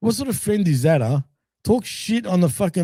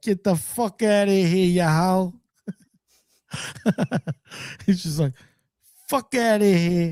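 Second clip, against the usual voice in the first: put-on New York mobster voice; 2 semitones higher than usual. Acting out a guy telling off his girlfriend: New York mobster voice. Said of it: "Starts talking like a New York freaking mobster".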